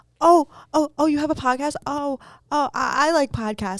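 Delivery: put-on high, slow, flustered, nervous stammering. Retelling how a shaking, nervous man spoke to them, imitating a nervous stutter. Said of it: "literally like shaking, stuttering".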